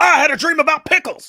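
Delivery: very high, loud blurted line. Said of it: "that's pretty good".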